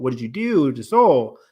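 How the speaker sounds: ordinary talk, nothing marked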